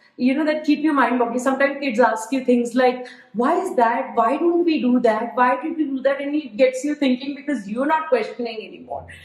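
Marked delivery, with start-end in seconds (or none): none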